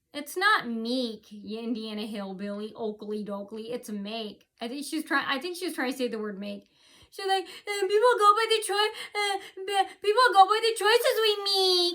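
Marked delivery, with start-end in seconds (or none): 7.8-11.9 put-on shrill, very high, loud little-kid yell. Retelling a woman's speech; imitating her childish yell. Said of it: "she started yelling like a little kid".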